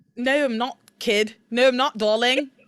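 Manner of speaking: put-on British accent. Told they're pretty good at a British accent, replying in a British accent. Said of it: "you're pretty good at like a British accent".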